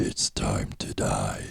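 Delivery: very deep, hushed, growling, threatening voice. Retelling a seven-year-old's words to his brother: very, very deep voice. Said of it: "in a very, very deep voice".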